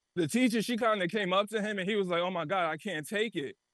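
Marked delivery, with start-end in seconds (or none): 2.3-3.6 put-on crying voice. Retelling what a crying friend said during a class movie: imitating someone crying. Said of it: "he started crying".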